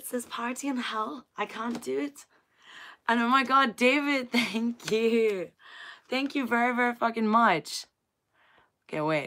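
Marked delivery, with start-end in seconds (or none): 0.0-2.3 put-on high-pitched, attempted Irish accent in a girl's voice. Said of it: "I can't even do an accent".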